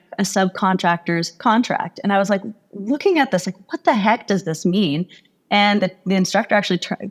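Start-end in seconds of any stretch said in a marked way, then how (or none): none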